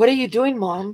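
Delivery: appalled, alarmed, horrified tone. Retelling Tucker's question after backing over the speed bump: imitating horrified Tucker. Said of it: "looking at me horrified".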